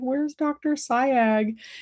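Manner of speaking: put-on, high, sobbing crying voice. Speaker retells asking the stand-in for the regular dentist, imitating own crying. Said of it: "crying and acting a fool".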